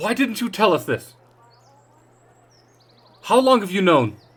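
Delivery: high, very loud accusatory yell. Voicing another townsperson shouting at the leaders: accusing shout. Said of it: "another person shouts".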